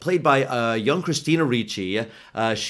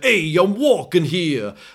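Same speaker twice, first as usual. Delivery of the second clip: over-the-top, exaggerated Brooklyn accent, pitched up; 6 semitones higher, 4 dB louder than usual. Mocking a Hollywood caricature of how people talk, in an exaggerated Brooklyn accent. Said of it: "a Brooklyn accent".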